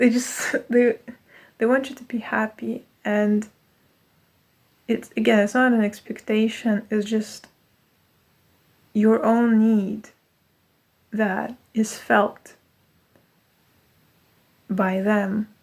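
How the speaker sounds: teary-eyed. Mid-conversation, getting teary-eyed again. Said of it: "I'm getting teary eyed again".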